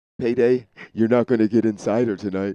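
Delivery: put-on creepy coaxing voice. Retelling what was said to them during a bathroom break, in a creepy luring voice. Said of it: "Like that in that voice".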